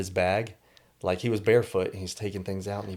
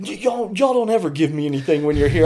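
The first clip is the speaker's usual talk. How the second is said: put-on angry complaining tone, higher and louder; 9 semitones higher, 10 dB louder than usual. Retelling a homeless man getting mad at them: imitating a man getting mad. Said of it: "getting mad at us".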